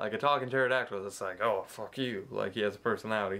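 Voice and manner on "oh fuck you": put-on tough-guy mobster voice. Retelling a cartoon scene, voicing a talking pterodactyl: mobster pterodactyl voice. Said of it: "He's like a mobster pterodactyl".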